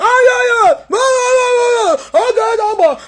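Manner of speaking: put-on screaming. Mocking how a man raised his voice: imitating someone screaming. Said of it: "That is why you are screaming".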